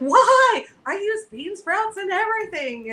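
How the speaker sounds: mock panic, very high-pitched and panicky. Retelling a shopper's reaction to losing bean sprouts: imitating a panicked shopper. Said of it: "she's in a panic".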